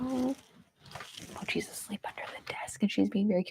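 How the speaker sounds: soft, breathy whisper under the breath. Speaker notices someone asleep under the desk nearby, whispering. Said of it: "Why am I whispering?".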